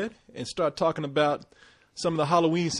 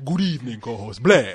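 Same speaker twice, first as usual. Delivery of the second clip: put-on vampire voice, much lower pitch; 5 semitones lower, 5 dB louder than usual. Greeting the co-host on a Halloween show, Dracula voice. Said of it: "my Dracula voice".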